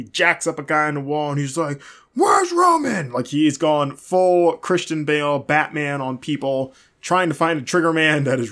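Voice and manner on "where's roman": shrill, very high, loud top-of-lungs screaming. Recapping a backstage scene, retelling Braun Strowman's scream for Roman Reigns. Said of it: "screaming for Roman Reigns".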